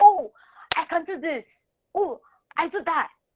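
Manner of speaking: high, pushy, aggressive yell. Showing how not to offer your work to someone, in aggressive yelling. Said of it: "you don't have to yell".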